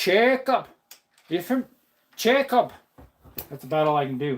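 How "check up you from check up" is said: Pennsylvania Dutch accented speech.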